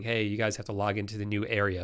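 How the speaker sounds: ordinary talk, nothing marked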